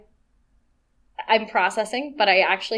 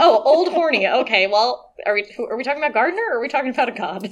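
mock incredulous, high, loud, rushed disbelief. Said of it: "I was like".

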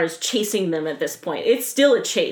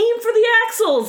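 mock, very high, high-pitched shouted yell; 13 semitones higher, 4 dB louder than usual. Retelling a movie chase scene, quoting what Shaw yells: imitating Shaw yelling. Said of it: "what does Shaw yell at him?".

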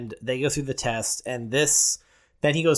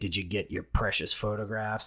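put-on patronizing, superior, condescending, talking-down tone; 4 semitones lower, 4 dB quieter than usual. Retelling a movie scene, acting out a character's line: mock-condescending. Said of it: "Kind of condescendingly".

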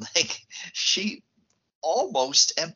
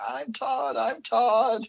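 shrill, very high, very slow, stretched-out screaming; 9 semitones higher than usual. Retelling a film scene where a character screams: imitating someone screaming. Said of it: "She starts screaming".

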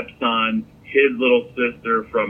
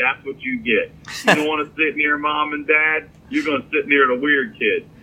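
words broken up by laughter throughout; 4 semitones higher than usual. Telling a movie theater story, speaker recalls laughing at the stepson: retelling own laughing. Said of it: "I start laughing like".

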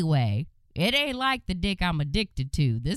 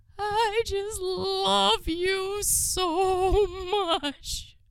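very high, slow, drawn-out blubbering through tears; 13 semitones higher than usual. Telling a story, the speaker quotes a crying man opening a box, imitating a man crying. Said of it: "And he's crying".

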